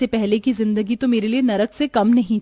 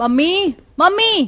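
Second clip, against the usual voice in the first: high-pitched, loud calling shout; 7 semitones higher, 3 dB louder than usual. Calling for mother early in the morning: shouting for mother. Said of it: "तू क्यों चिल्ला रही है सुबह सुबह".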